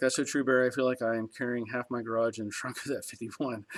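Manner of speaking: plain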